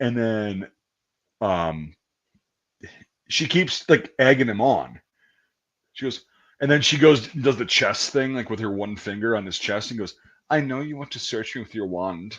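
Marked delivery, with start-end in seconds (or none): 10.5-12.4 put-on Romanian accent, quieter. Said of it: "her Romanian accent".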